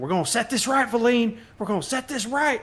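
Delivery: very high, rising call-out yell. Shaking a bottle before throwing it, yelling to a companion. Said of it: "I'm yelling to".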